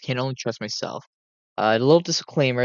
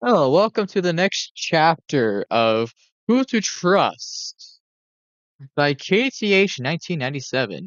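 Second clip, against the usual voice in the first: silly, goofy put-on voice, pitched up; 5 semitones higher, 3 dB louder than usual. Opening the next chapter of who to trust, the speaker uses a goofy voice. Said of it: "why I'm doing a goofy voice".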